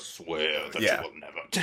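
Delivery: very low, deep voice. Imagining the ghost's line done by James Earl Jones: James Earl Jones voice. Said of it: "James Earl Jones".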